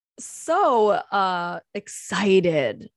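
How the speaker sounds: thick, very sarcastic fake excitement. Introducing the day's podcast topic, the pandemic: very sarcastic. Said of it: "I'm being very, very, very sarcastic right now".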